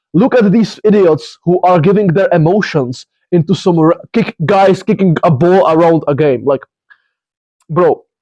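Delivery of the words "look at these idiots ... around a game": usual speaking voice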